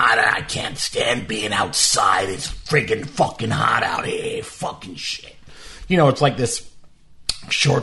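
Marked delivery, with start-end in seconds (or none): 0.0-5.4 put-on slow, grouchy, grumbling old man voice. Riding in the car to lunch, the speaker voices a passerby in a made-up old man voice. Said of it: "I'll make a voice for them like".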